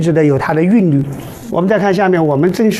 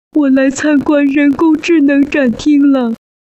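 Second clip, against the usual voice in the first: put-on cartoon little-boy voice; 9 semitones higher than usual. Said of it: "还可以用蜡笔小新的声音".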